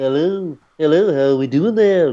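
put-on Liverpudlian cartoon voice. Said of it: "He's got the great Beatles accent".

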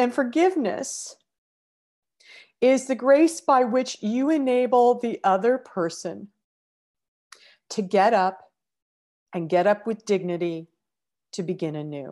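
moved, heartfelt, openly emotional reading. Reading a quote on forgiveness aloud to listeners: emotional. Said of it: "I'm emotional".

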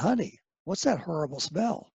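whispering. Retelling asking his wife about a smell at a party: retelling a whisper. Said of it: "I whispered to my wife".

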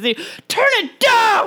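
mock breakdown outburst. Retelling a dad watching the news who has a total breakdown: imitating a character's total breakdown. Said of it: "a total breakdown".

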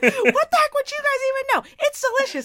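shrill, swooping, very high, full-volume scream. Recounting how someone walked in on them mid-rant: retelling own screaming. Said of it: "as I was like screaming about this".

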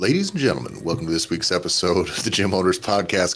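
hyped-up, put-on radio announcer voice. Opening an episode of the Gym Owners Podcast: radio announcer voice. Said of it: "coming in hot with a radio voice".

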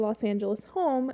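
normal talking voice

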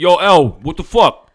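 rough-edged, loud, stretched-out voice. Teasing her about how she greets him off the pod, imitating a rough greeting. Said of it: "sometimes you get a little rough".

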